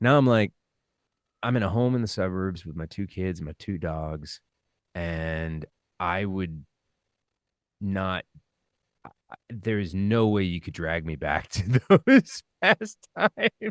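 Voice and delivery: voice close to tears, on the verge of crying. Describing life now in the suburbs with two kids, close to tears. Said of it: "are you crying right now?".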